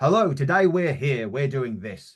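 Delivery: loud, clear, projected voice. Demonstrating how to speak with a chest microphone on, loud and clear. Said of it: "speak nice and loud and clear".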